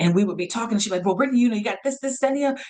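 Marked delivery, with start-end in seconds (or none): 1.1-2.6 rushed, fast, pitched-up, hurried rattling chatter. Retelling how a former supervisor spoke: imitating someone talking fast. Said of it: "and she would talk fast".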